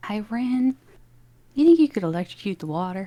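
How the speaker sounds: secretive aside, slipped in confidentially. A player leans over to rin during the scene: as quietly as possible. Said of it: "just as quietly as I can".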